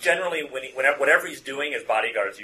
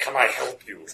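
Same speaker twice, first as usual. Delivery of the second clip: put-on English in a thick, heavy Russian accent. Voicing a bodyguard who intercepts a player: heavily accented Russian English. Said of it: "in very heavily accented English".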